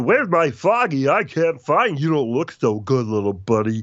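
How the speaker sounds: deliberately dim-witted character voice, pitched high. Voice actor contrasts his Duke Nukem voice with his dumb Big the Cat voice. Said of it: "such a dumb voice I did".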